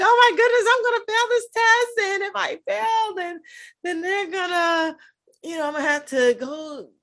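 play-acted weepy sobbing, very high, panicked crying. Speaker retells calling mom during dental school: imitating own crying. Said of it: "I called my mom crying".

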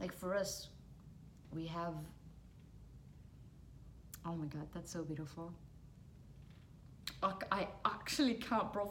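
weeping while speaking. Retelling someone's words about the hereafter, crying. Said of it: "I'm actually crying".

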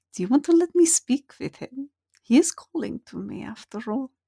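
soft half-whisper, close to the ear. Voicing Santhavek half-whispering to a player: half-whispering in someone's ear. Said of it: "Santhavek just kind of whispers in your ears".

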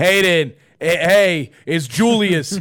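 put-on New York accent. Retelling a voicemail from a club booker: new york accent. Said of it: "so New York".

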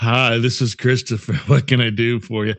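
very deep, low put-on man's voice. Acting out a phone sex line answering a call: put-on deep man's voice. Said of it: "speaking of a man with a deep voice".

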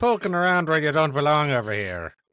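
high, loud, mock stage-Irish cop accent. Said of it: "this is the old Irish cop".

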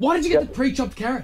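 irritated, angry voice pitched very high. In a sketch, breaking off a phone pizza order to confront someone, angry. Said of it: "I'm angry at you".

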